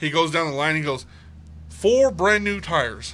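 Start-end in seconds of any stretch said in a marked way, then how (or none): 1.7-3.1 put-on southern dad voice, higher and louder. Retelling a TikTok video of a pretend Southern dad: imitating a Southern dad. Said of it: "he pretends to be a Southern dad".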